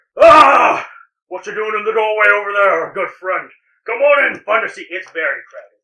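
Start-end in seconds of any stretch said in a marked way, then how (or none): 0.2-4.9 very loud, high holler. A game narrator voices the bartender calling to a player in the doorway, yelling bartender. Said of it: "the bartender yells to you again".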